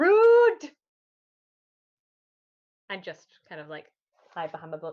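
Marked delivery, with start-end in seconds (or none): 0.0-0.7 very high-pitched, drawn-out yell. Yelling at enemies who deflected an attack: yelling in character. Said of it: "I'm gonna yell".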